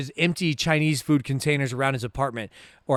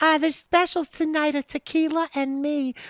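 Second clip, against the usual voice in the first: sudden jump into very high put-on voice; 13 semitones higher than usual. Retelling a character's reply when asked if she can: imitating a Betty Boop voice. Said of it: "she switches her voice up".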